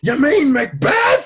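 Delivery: big carrying bellow, very high, very loud. Retelling a man's reply before the show, in a big booming shout. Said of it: "big, booming voice, and he shouts back".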